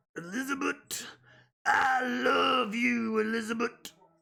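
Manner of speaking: rough, very slow wrestler drawl. Showing viewers how to say the name: Macho Man impression. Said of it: "do a good Macho Man impression".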